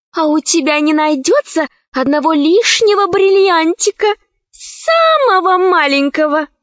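small, kittenish, cat-like little voice. A narrator reads one character's question to another, in a cat-like little voice. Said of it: "спросила Заури кошачьим голоском".

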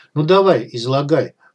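ordinary delivery, nothing marked

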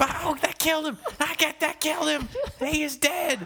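very high, screamed, shrill call-out. Retelling a famous wrestling commentary call: J R screaming commentary call. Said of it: "J R is just screaming".

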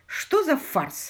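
annoyed grumbling tone. A lord waiting among robed peers being lined up grumbles irritably. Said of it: "раздраженно проворчал лорд Аттенбери".

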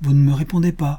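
voice full of anguish. Getting no answer from the man she questions, a woman presses him, anguished. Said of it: "reprit Marie avec angoisse".

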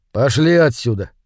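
ordinary delivery

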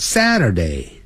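Saturday sliding down in pitch, high to low. Teaching English weekday names, with Saturday falling from high to low. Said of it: "由高音往低自然下降".

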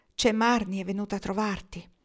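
ordinary delivery, nothing marked

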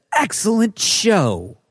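heavy stress on "Excellent show". Reading a viewer's comment aloud with emphasis on excellent show. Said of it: "That's my emphasis on it".

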